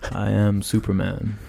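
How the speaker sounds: put-on, imitated robotic voice. Retelling a movie moment where a character speaks, in a robot voice. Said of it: "in his robot voice".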